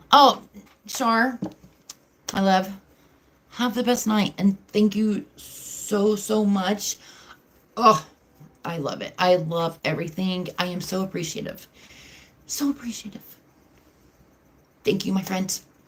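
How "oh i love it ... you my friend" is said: choked up, on the verge of crying, faster. Thanking a friend who is leaving for the night, choked up and near tears. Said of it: "Don't make me start crying again".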